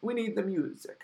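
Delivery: poor put-on Italian accent. Talking about Halloween 5 and quoting Dominique: bad Italian-accent Dominique impression. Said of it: "a piss-poor attempt at an Italian accent".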